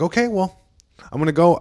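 low-key, unassuming, gentle, mild-mannered voice. Retelling how the guy grabbed the mic: imitating a soft-spoken man. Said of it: "a very soft spoken".

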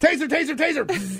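mock very high police-style alert shout, loud. Acting out a cop announcing the taser before firing: mock cop shouting taser warning. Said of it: "You gotta announce it first".

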